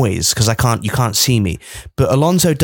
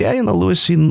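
put-on Spanish-accented voice, higher pitched; 5 semitones higher than usual. Retelling what a driver said after the race in the paddock: imitating Fernando Alonso's accent. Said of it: "I don't know what I'm doing with that accent".

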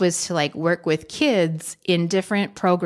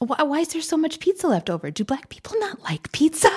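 put-on whisper, higher pitch; 10 semitones higher than usual. Retelling a mother's sheepish question about leftover pizza: imitating mom whispering. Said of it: "whispered it".

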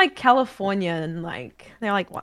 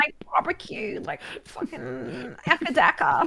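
put-on clichéd Queensland Australian accent; 6 semitones higher than usual. Explaining how people stereotype Queenslanders, imitating them in a mock Queensland Australian accent. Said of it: "Like they talk like that".

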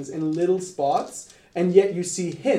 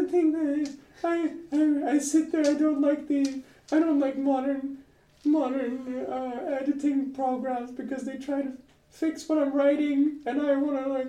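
put-on squeaky voice, much higher and slower; 8 semitones higher, 4 dB quieter than usual. Describing two authors talking, doing George R. R. Martin with a squeaky voice. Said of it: "has a very squeaky voice".

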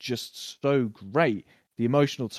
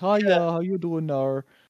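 put-on pitched-up Minnesota accent; 6 semitones higher, 3 dB louder than usual. Describing how a woman comes in and greets people, in a Minnesota accent. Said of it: "I think it's from Minnesota, like that accent".

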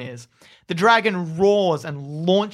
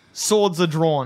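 normal talking voice

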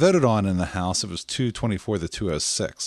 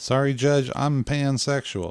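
Southern US accent dropped in suddenly, pitched up; 5 semitones higher than usual. Speaker imagines getting out of jury duty, telling the judge: sudden Southern accent. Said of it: "I gave you the Southern accent all of a sudden".

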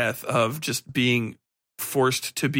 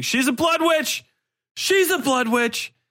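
mock, very high, shrill, gleeful shriek; 14 semitones higher, 3 dB louder than usual. Retelling own reaction while watching the show: imitating own screaming. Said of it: "I was screaming".

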